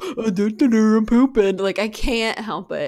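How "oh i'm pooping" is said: loud, silly, dim-witted dopey dog voice. Showing the voice they make whenever they see a dog pooping: voicing a pooping dog. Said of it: "I instantly make this voice".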